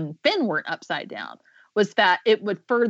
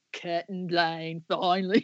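very slow, put-on Australian voiceover-guy accent; 2 semitones lower, 6 dB quieter than usual. Imitating a promo voiceover guy: Australian accent. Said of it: "That's my Australian accent".

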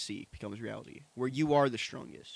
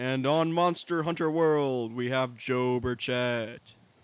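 loud, grand, big announcer-style voice; 5 dB louder than usual. Host introducing the debate's contestants, in a big announcer voice. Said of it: "I'm also doing the big announcer voice".

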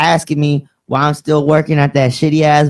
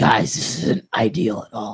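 airy, hushed, breathy whispered voice; 5 semitones lower, 7 dB quieter than usual. Telling a story about pulling up with friend James, imitating James. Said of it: "what is this voice?".

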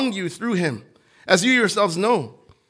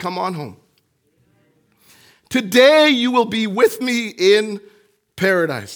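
emotional, feeling-laden preaching voice. A preacher at church, quoting Jesus to the congregation, getting emotional. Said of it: "I'm getting emotional".

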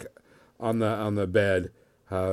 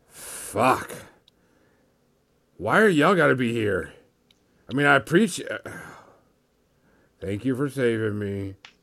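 put-on gruff, grumbling, fed-up old man voice; 3 semitones higher than usual. Describing a character's voice, the speaker shows it: a Clint Eastwood-type fed-up voice. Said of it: "old army man that's just tired of your shit type voice".

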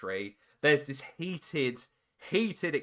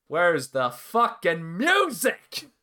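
loud, high, swooping, slow, drawn-out holler; 5 semitones higher, 8 dB louder than usual. Retelling the moment a music cue was missed: imitating Vampiro on commentary. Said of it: "hear Vampiro on commentary going".

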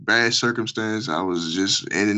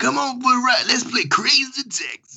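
announcer voice, very high and drawn out. Remembering an old game, doing an impression of the Crazy Taxi announcer. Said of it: "There go another impression for y'all".

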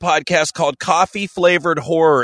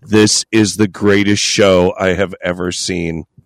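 voice dropping to a lower pitch; 9 semitones lower than usual. Retelling what gets said whenever a boob appears on screen: dropping into a lower voice. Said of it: "I just drop into this lower voice".

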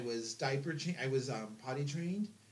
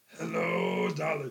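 deep, booming, loud put-on jazzman voice; 8 dB louder than usual.

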